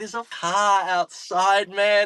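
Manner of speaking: mock very high, drawn-out panicked scream. Recounting the moment she screamed to Luke: retelling a scream. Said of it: "and I'm like screaming at Luke".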